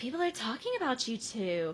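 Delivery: sugary, sweet-talking put-on voice. Retelling a scene where Kate asks for help: imitating Kate's sweet voice. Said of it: "She has her sweet voice on".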